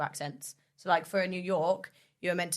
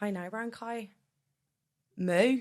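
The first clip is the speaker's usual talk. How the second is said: put-on Irish cow voice, higher; 3 semitones higher than usual. Joking with others about a cow, doing an Irish-accent cow voice. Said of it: "And an Irish cow goes".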